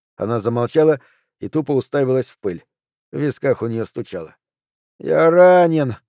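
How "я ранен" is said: moaned out, groaning. The wounded Harman speaks to Hannah again, moaning. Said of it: "опять простонал Харман".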